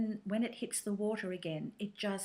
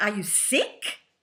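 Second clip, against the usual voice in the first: imitated German accent, louder; 10 dB louder than usual. Retelling a lady's question in a café: German accent. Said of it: "please excuse the German accent".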